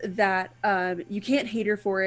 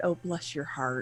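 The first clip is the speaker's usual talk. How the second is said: play-acted kindly, disarming, forgiving grandmotherly sweetness; 5 semitones lower, 8 dB quieter than usual. Recalling a character's forgiving line: imitating a "bless your heart" tone. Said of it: "I heard it in that same tone that you said it".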